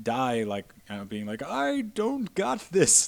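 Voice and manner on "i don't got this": put-on awful old man voice, very high and very slow. Joking about the worst possible last words: world's worst old man impression. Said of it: "also multiplied by the world's worst old man impression".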